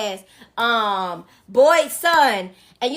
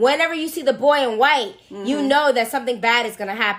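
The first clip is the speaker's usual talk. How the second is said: ordinary talk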